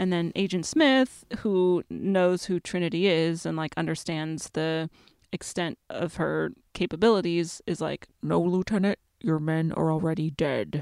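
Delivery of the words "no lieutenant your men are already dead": menacing delivery like a movie villain. Retelling Agent Smith's line to a lieutenant, as a Hugo Weaving impression. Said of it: "an amazing Hugo Weaving impression".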